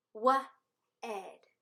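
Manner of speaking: each part slowly sounded out, drawn long, blended. Sounding out two parts of a word together, slowly. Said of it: "Slowly roller coaster down".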